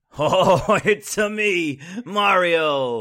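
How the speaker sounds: high, loud cartoon voice with Italian accent. Guessing how Chris Pratt will voice Mario, in a Chris Pratt as Mario voice. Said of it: "Is that your Chris Pratt doing Mario voice?".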